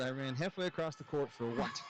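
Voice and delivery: ordinary talk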